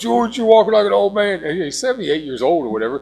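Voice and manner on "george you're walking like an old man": loud, high, barking drill sergeant voice. Imitating Uncle Ed telling the speaker's dad to straighten up, Uncle Ed's drill-sergeant voice. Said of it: "sounded like a, a drill sergeant".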